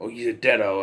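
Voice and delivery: ordinary delivery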